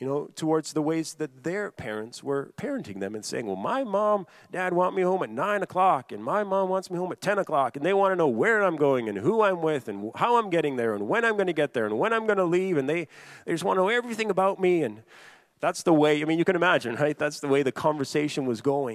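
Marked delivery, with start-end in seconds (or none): 3.5-14.8 high-pitched, rapid, critical complaining tone. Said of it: "be almost critical".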